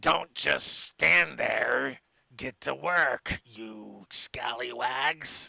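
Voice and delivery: loud, rough, creaky goblin voice. The goblin turns to the players and orders them to work; goblin voice. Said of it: "the goblin turns and looks towards you and says".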